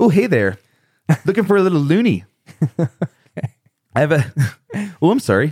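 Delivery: high-pitched put-on Canadian accent. Asked to let someone hear your best Canadian accent, show it off in a put-on Canadian accent. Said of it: "This is my Canadian accent".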